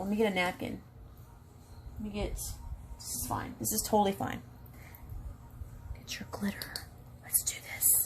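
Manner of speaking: very quiet, hushed whispered chatter. Speaker walking viewers through applying glitter to a bald spot, whispering. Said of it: "I don't know why I'm whispering".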